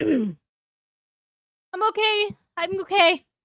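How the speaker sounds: very slow, high-pitched delivery. Reassuring another speaker right after inhaling water: recovering after inhaling water. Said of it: "I inhaled water".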